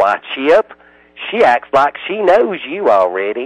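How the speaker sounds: put-on elderly Southern man voice. Retelling what the old man running the kennel said, in a southern accent. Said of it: "said in his inimitable Southern accent".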